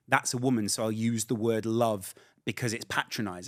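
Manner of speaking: ordinary talk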